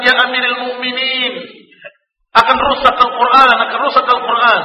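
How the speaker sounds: high, urgent, pleading alarm.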